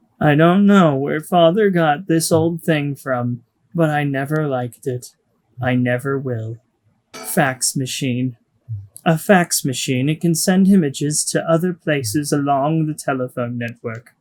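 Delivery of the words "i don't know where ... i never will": flat, expressionless, emotionless deadpan. Reading a character's line aloud from a script, deadpan. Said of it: "Just make it sound deadpan".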